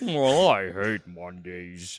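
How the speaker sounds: very deep, low-pitched cartoon cat voice. Imagining how he'd play a cartoon cat in a game, Garfield voice. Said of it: "Why does your Garfield sound".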